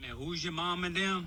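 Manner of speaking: high, soft Cajun drawl. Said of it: "I guess it'd be called a Cajun accent".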